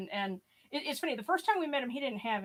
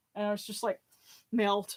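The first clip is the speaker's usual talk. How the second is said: plain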